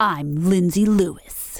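mock toughest voice. Podcast host introducing herself on a co-host's request, in her toughest voice. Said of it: "do your toughest voice introducing yourself".

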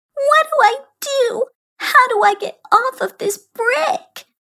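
whiny, whining voice. Narrating Juanita, who holds her little rope and looks around, whiny voice. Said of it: "she asked in a whiny voice".

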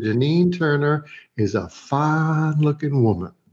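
put-on Southern accent, drawn-out fine. Speaker retells recording a line for a woman, in a southern accent. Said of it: "Somehow now I'm in a Southern accent".

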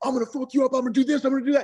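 put-on very high, wild, menacing screaming. Speaker retells a fighter screaming at his buddy before a fight, imitating the screaming.

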